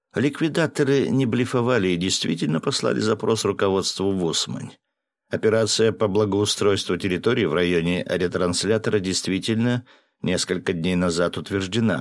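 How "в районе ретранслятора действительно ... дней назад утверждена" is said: ordinary delivery, nothing marked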